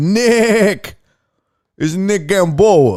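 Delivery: put-on Italian-American New York Queens accent. Greeting a chat viewer in a put-on Italian New York accent. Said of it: "I don't know why I make Nick, uh, Italian".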